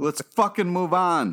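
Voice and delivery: fed-up, irritated voice with an angry high edge. Urging the others to move past a joke: angry. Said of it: "Don't be so angry".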